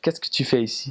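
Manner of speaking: careful, very proper, standard France French. Demonstrating how someone in france would ask the question, very proper french. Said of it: "very proper".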